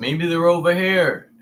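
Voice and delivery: joking, light, tossed-off delivery, a touch high. Retelling a speech joke about missing weapons: imitating Bush joking. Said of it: "he's making a joke out of not finding weapons".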